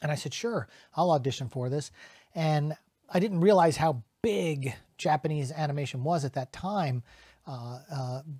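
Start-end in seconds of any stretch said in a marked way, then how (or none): none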